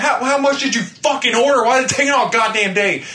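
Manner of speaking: high, loud, angry, furious yell.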